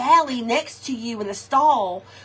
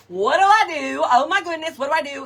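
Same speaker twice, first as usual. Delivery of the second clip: mock horrified, flustered, panicked and frantic; 3 semitones higher, 3 dB louder than usual. Retelling a moment at a favorite restaurant: retelling own panic. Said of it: "I'm, like, panicking".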